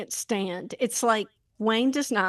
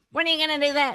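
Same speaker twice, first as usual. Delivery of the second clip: high, nagging, pestering voice; 5 semitones higher than usual. Describing how a spouse sounds when pushing their partner over and over, voicing the nagging question. imitating a nagging voice. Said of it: "the nagging voice".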